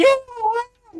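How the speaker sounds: shrill, very high, very loud screamed delivery. Voicing a character who screams at a locked-up creature: screaming at a monster. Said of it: "Atticus, screaming".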